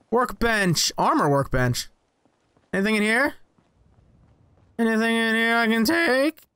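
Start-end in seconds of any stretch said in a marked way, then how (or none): 5.6-6.3 voice cracking partway through the words. Searching for items while playing a game, voice cracking. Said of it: "My voice cracked unnecessarily".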